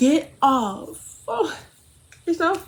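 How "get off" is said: high, play-acted yell. Retelling tussling with a man while taking bags out to the hallway; retelling a yell. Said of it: "I'm like yelling at him".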